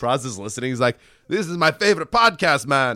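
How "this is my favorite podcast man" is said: put-on Jamaican accent, high pitch. Imagining Praz listening to the podcast: Jamaican accent as Praz. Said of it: "I also gave Praz a Jamaican accent".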